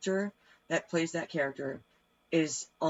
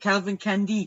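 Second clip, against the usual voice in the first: put-on French accent, higher and louder; 4 semitones higher, 7 dB louder than usual. Repeating the villain's name to show it: french accent. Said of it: "I was doing a French accent".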